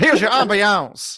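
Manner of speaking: put-on southern drawl. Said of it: "That's what he sounded like".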